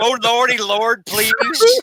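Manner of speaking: put-on terrified, high, cowering begging. Describing a guy cowering behind a bulldozer's wheel, voicing him: imitating a cowering man pleading. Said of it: "a guy cowering behind the wheel of a bulldozer".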